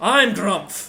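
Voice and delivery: loud, yelling orc voice. Narrating two orcs yelling in Orcish, the speaker voices the other orc: the other orc's voice. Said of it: "And the other one goes".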